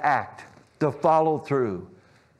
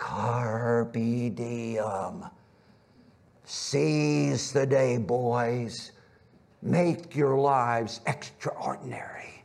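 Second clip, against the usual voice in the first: eerie ghostly voice, "diem" drawn out. Retelling how a man leans in as boys look at pictures, use a put-on eerie, grave-like voice. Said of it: "with this eerie, grave-like voice goes".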